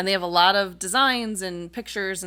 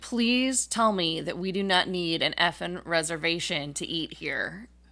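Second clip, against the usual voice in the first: grave, earnest, dead-serious pleading voice. Retelling what the other speaker said to a hostess: imitating a super serious plea. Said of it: "you look super serious when you say these things".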